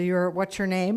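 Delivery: normal talking voice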